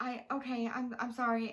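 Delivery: put-on teary, tearful voice. A passenger retells her reply to the stewardess, retelling a teary apology. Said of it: "I have tears in my eyes".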